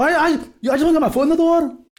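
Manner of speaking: put-on Scottish accent, pitched very high, squeaky. Imitating how the people in Trainspotting talk: Trainspotting Scottish accent. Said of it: "They talk like this".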